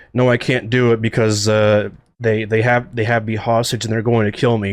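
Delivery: plain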